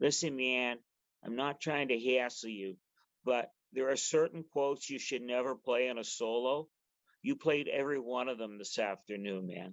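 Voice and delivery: put-on western New York accent. Retelling what your saxophone teacher said after a concert, imitating a Buffalo accent. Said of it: "I'll do my best Buffalo accent".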